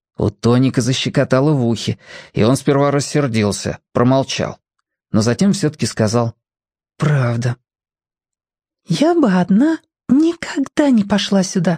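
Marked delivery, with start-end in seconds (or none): 8.9-11.8 whispering, much higher, slower. Lilka speaks to Tonik again while they gather worms, whispering. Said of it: "опять прошептала Лилька".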